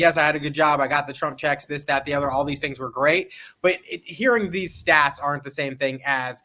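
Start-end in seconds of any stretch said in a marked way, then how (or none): none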